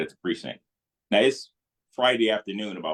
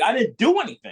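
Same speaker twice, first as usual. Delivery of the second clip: mock yelling, pitched way up and shrill; 3 dB louder than usual. Retelling protesting to a police officer while handcuffed: imitating own past yelling. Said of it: "what the fuck is you yelling at?".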